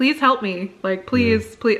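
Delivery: pleading, begging tone. Retelling being in labour pain and begging for help: imitating own begging. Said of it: "begging for help".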